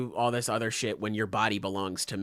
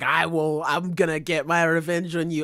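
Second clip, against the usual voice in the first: put-on screaming, higher and louder; 7 semitones higher, 5 dB louder than usual. Retelling a manga character's threat to an opponent, imitating a character screaming. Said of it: "he's fucking screaming like".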